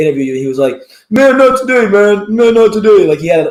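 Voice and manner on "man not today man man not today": mock whiny tone, higher and louder. Retelling a boxer's refusal of an interview, imitating a whiny voice. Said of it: "a bit of a whiny voice".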